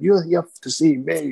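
loud, high, drawn-out scream. Retelling screaming at kids over the ring barrier: imitating own past screaming. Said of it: "just started screaming at them".

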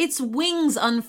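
usual speaking voice

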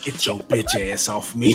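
put-on whisper. Imagining a witch whispering in someone's ear, a mock whisper. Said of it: "gonna whisper in their ear like".

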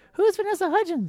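very high, squeaky cartoon mouse voice. In a group story, a voice outside the hut calls out, in a Mickey Mouse voice. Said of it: "That's Mickey Mouse".

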